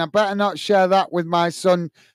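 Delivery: ordinary delivery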